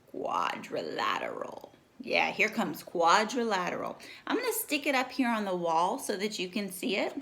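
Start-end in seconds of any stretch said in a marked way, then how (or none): 0.1-1.7 rough, creaky robot voice. Teaching children a new word, saying it like a Transformer. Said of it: "Say it like a Transformer".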